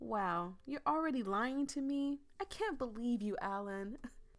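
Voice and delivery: loud, snide, snarky tone. Narrator reads a retort to Alan after he lies about his name, snarky tone. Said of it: "in a snarky tone".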